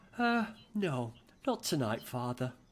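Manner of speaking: slow, affected, put-on posh accent. Imitating how his son turns down the vegan food: put-on posh voice. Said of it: "In a posh voice like that".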